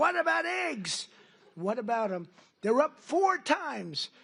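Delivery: put-on high, hectoring, clamouring reporter voice. Speaker recalls reporters shouting questions at his news conference, retelling reporters screaming. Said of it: "I'm standing there very innocent".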